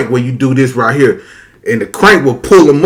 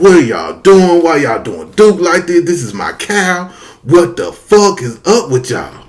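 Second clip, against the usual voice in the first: mock tearful, desperate, crying, pleading outburst; 3 semitones higher than usual. Retelling the slaughter of a pet cow as a child: imitating his childhood crying.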